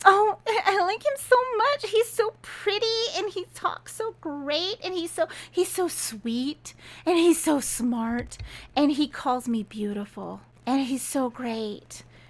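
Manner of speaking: acted giggly, high, gushing voice. Retelling how a character acts after sleeping with him: imitating someone giggly. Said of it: "She gets all giggly".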